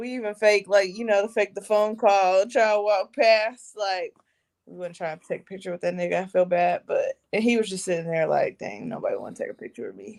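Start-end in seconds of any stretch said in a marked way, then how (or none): 8.6-10.2 mock whispered, forlorn, sad hushed mutter. Retelling a man left sitting alone with no photos: imitating someone sad.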